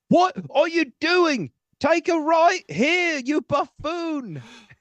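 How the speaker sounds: very high, slow, drawn-out voice with pitch way up. Trying out the suggested voice on a driving direction: John Oliver impression. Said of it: "I kinda want John Oliver".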